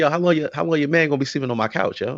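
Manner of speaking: plain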